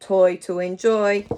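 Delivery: very deep, loud, grumpy grouchy voice. After asking for the practice phrase in a grumpy voice, say it in a grumpy voice. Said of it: "Can you say it in a grumpy voice?".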